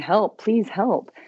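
mock screaming. Recalling being shot and calling for help, retelling screaming for help. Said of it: "I'm screaming".

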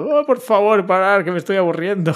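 put-on high little girl voice, crying out mildly. Retelling a running joke at a prize ceremony: imitating a little girl shouting. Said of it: "Que grita".

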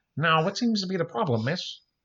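frog-puppet character voice. Imagining Kermit the Frog as a police officer, a host speaks in a Kermit the Frog voice. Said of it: "Kermit the Frog is a police officer".

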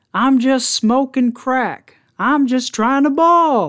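mock shrill, very high-pitched, loud shouted outburst. Retelling what a guy behind them yelled in a coffee shop, retelling the yell. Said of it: "this guy yells".

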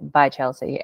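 usual speaking voice

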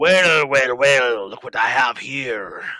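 deliberate, slow, drawn-out, hulking orc voice. Game master voicing the orc captain holding a captured player, Scarbelly orc voice. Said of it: "He is a largely built orc".

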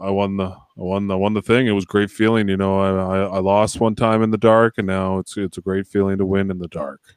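flat, robotic monotone. Speaker imitating how he talks in the dr, in a robotic monotone. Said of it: "he talks like a robot".

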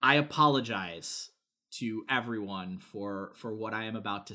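serious, grave voice. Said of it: "put on my serious voice".

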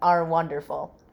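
usual speaking voice

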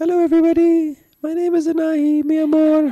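very high-pitched, loud voice. Imitating the other speaker's voice: Anahi impression. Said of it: "I think I sound a bit like Anahi".

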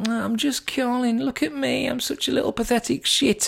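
very high, squeaky, creaky, small, self-pitying, pathetic voice. Mocking a timid phone caller who says just: mock pathetic caller voice. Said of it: "like a pathetic little".

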